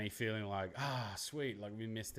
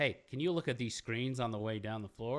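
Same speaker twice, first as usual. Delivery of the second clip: loud, put-on American accent; 2 semitones higher, 5 dB louder than usual. Redoing a quoted request from the story in a put-on American accent. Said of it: "I do my American my American accent on".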